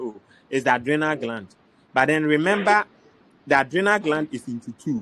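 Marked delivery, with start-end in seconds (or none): none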